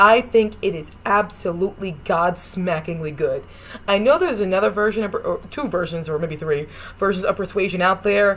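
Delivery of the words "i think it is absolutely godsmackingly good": ordinary delivery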